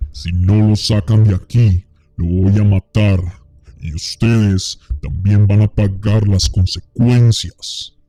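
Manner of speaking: frightening, terrifying voice from deep in the throat. Narrator reads the words of a voice that is not the man's own: guttural, terrifying voice. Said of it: "gutural y aterradora".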